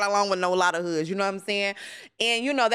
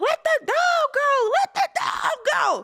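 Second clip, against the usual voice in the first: put-on very high, stretched-out, drawn-out shriek. Retelling a partner choking her dog, imitating her own scream. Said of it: "I'm screaming".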